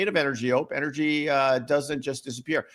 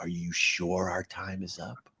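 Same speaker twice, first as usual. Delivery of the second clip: deep, very quiet, hushed murmur; 10 semitones lower, 9 dB quieter than usual. Retelling their own reply when told their time was up, retelling a lowered voice. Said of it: "that's when I lowered my voice".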